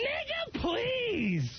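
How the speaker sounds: high-pitched, shrill voice.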